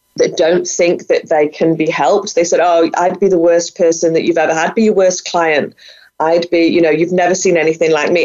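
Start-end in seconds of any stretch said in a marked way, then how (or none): none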